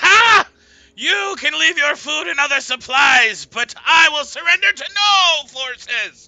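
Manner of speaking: very loud, high-pitched scream. Voicing a wizard who defies a paladin: Mad Wizard screaming. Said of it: "The Mad Wizard screams at you".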